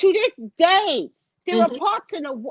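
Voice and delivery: voice growing upset, worked up, breaking off. Arguing about what happens after a disaster, getting upset. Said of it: "I'm sorry, I'm getting upset".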